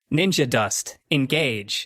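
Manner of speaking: smooth synthetic robotic female machine voice. Narrating a thrown helmet that sounds off as it flies: robotic female voice. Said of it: "nice robotic female voice just echoes out".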